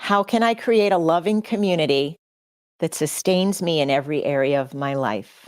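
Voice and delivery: emotional, choked up, voice breaking and catching. Sharing her own most important question with listeners, a little choked up. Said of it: "I am going to get a little choked up here".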